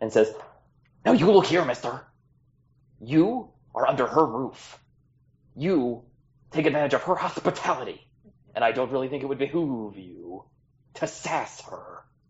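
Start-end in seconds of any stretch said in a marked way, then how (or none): 1.0-12.0 intimidating, menacing, swooping tone. Voicing a tiny character who confronts another for sassing their host: intimidating. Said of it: "gets as intimidating as it's possible".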